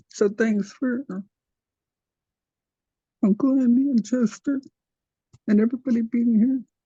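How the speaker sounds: heartfelt, moved, emotional voice, feeling welling up. Thanking family and everybody at a language class: emotional. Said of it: "I just got emotional".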